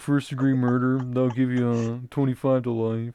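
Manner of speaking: lecturing, teacher-like voice. Imitating a former law teacher who sounded like Mr. Mackey. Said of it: "He sounded like Mister Mackey".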